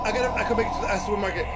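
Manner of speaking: fast, breathless, gasping panicked speech.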